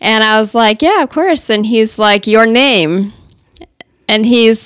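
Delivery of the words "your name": put-on strong, best-effort Russian accent. Retelling a question a man with a strong accent asked after a conversation, Russian accent. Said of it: "my best Russian accent".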